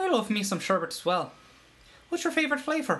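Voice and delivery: light put-on Irish accent. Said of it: "it's a decent Irish accent".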